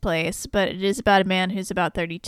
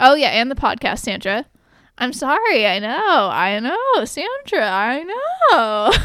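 loud, high, swooping sing-song, long drawn-out "know"; 5 semitones higher, 5 dB louder than usual. Imitating the co-host's impression, apologizing to Sandra: Jerry Seinfeld impression. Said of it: "my impression of your Jerry Seinfeld impression".

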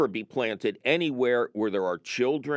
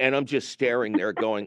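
usual speaking voice

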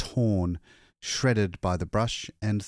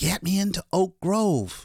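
gasped out, pitched very high; 11 semitones higher than usual. Loyce answers an attendant who wants to fetch a doctor, gasping. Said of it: "Loyce gasped".

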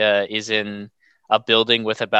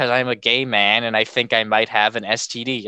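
usual speaking voice

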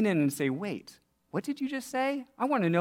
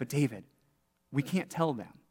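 alarmed, panicky, panicked voice; 6 semitones lower, 5 dB quieter than usual. Retelling what a student said about a cool bakery: imitating a panicked voice. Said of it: "in a panicked voice".

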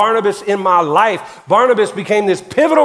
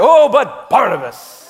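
eager, lively, excited sing-song exclamation. Leading the audience in repeating a phrase, showing how to say it excited. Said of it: "Say it like you're excited".

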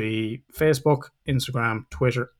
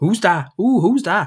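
put-on, nosy, raised-voice northern English accent; 6 semitones higher, 4 dB louder than usual. On a podcast, acting out nosing out the window at passers-by, in a Peter Kay northern accent. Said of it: "I do that fucking Peter Kay North accent".

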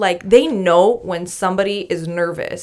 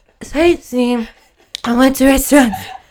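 mock-nervous, much higher; 5 semitones higher, 5 dB louder than usual. Retelling answering a man's questions, acting out being nervous. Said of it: "I can't get the words out".

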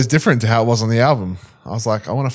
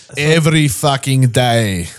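muttered, poor put-on Russian accent; 3 dB louder than usual. Retelling what a man mutters, the speaker repeats his line in a bad russian accent. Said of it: "Not South African".

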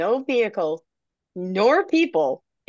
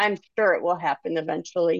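ordinary delivery

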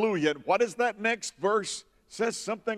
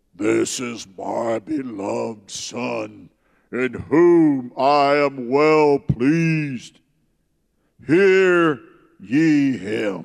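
very low, booming, deepest possible bass voice; 8 semitones lower, 6 dB louder than usual. Retelling the baptism scene, the speaker voices the voice from heaven: deepest bass voice. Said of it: "See if I can find my deepest base".

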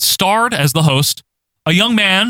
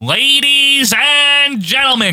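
high-pitched boxing announcer voice; 10 semitones higher than usual. Describing a wrestling show's tuxedoed announcer, doing Gene Wood ring-announcer voice. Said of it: "because that's how they announce".

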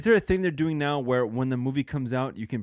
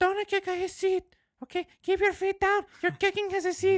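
put-on Mexican accent, very high pitched. Retelling a mom at the movie theater scolding her kid; Mexican mom accent. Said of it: "that's my only accent I got from Mexican".

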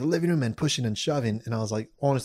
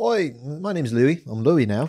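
fake Liverpool Scouse twang, put on; 3 semitones higher, 4 dB louder than usual. Retelling mingling with people at a party pregame, in a fake liverpool accent.

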